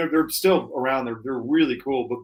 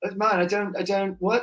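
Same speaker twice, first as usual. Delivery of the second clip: put-on English accent, higher; 7 semitones higher than usual. Imitating how English people react to a Seinfeld joke: English accent. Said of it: "That's a good English accent".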